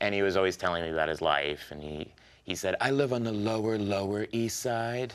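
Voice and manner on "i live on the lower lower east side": slow, drawn-out, particular way of talking. Retelling how a coffee shop barista talked: imitating a barista's way of talking. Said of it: "a barista there who kinda talked like that".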